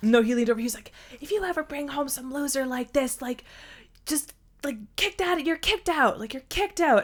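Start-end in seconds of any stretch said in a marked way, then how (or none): 1.2-7.0 put-on shout-whisper, higher. Retelling what he said after leaning over, retelling a shout-whisper. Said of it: "shout whisper".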